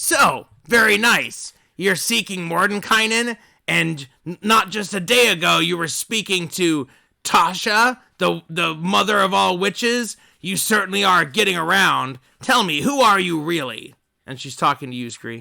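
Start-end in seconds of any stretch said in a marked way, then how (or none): 0.0-13.9 small, little creature voice. Voicing a little creature answering a player in the game: voicing the little guy. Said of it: "and he says".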